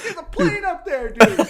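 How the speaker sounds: shrill, very high, loud yelled scream. Recounting how the group screamed at Rob, the speaker retells the scream. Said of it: "we're screaming at Rob".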